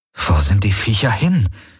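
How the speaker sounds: plain reading voice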